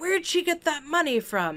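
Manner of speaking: play-acted, loud, high-pitched, blurted out. Recounting what a person in the theater asked, retelling a loud question. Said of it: "really loudly".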